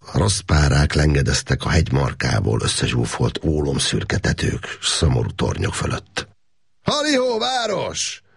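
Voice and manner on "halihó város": very high-pitched, loud, carrying shout. A man on the hillside hails the town below; shouting a greeting. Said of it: "Kiáltotta Makos Gábor".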